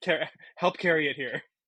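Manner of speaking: mock annoyed, angry voice. Retelling how Jenna scolded Logan for not joining in: imitating Jenna getting mad. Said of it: "also getting mad, like".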